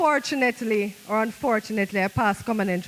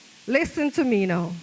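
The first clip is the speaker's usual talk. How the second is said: plain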